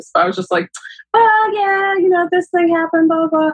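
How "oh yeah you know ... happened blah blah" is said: own voice pushed very high, put-on. Retelling a talk with dad, imitating own past voice. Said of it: "I don't know why I'm giving myself this voice".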